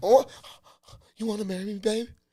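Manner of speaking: put-on feminine, high, soft, girly gushing tone. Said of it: "your response alone is gonna be feminine".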